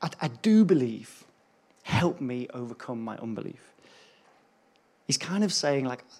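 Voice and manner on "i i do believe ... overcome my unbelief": mock stammering, desperate pleading voice. Reading a father's reply to Jesus about his son: imitating a desperate father. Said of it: "you can almost hear the desperation in this poor father's voice".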